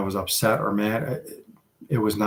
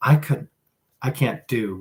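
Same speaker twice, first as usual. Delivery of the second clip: usual speaking voice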